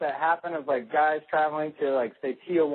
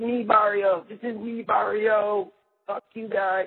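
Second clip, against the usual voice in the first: play-acted angry, riled-up outburst, high and drawn out; 5 semitones higher than usual. Retelling how a drunk man reacted to being told off: imitating a man freaking out. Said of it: "the dude just absolutely freaking out".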